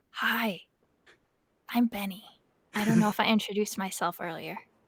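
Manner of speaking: big, loud whisper. Voicing a giant greeting a small creature up close: big giant whisper. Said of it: "a big giant whisper".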